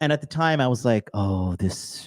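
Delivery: ordinary delivery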